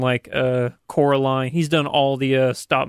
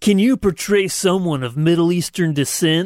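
attempted, put-on broadcast radio announcer delivery; 4 semitones higher, 3 dB louder than usual. Attempting a radio voice to read an ad for another speaker: radio announcer voice. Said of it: "I'm going to attempt a radio voice".

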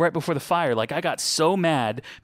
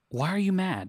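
soft, tender, gentle, loving tone; 4 semitones higher, 4 dB quieter than usual. Retelling how God spoke to them while they were mad: imitating a gentle, loving question. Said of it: "God very gently, lovingly spoke to me like".

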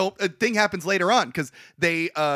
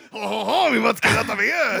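exaggerated put-on French accent, much higher; 5 semitones higher, 4 dB louder than usual. Imagining all of france leaving, voicing them in an exaggerated french accent. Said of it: "what an amazing French accent".

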